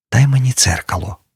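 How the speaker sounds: hushed, faint half-whisper. Pat, coming round after her fever drops, asks the narrator; half-whispering. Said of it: "прошепотіла трохи згодом".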